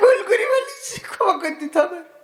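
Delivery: high, whimpering, pleading dog voice. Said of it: "লেজটা খালি কোষের মধ্যে নিয়ে কয়".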